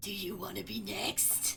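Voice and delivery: low, rumbling half-whisper. Narrator voicing Sluggoth questioning her, voice lowered to a rumbling half-whisper. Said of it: "lowers his voice to a rumbling whisper".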